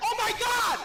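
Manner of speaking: shrieked with delight, very loud and very high. Speaker retelling hearing their lost wallet was returned at a store, retelling own yell. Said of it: "I yell it".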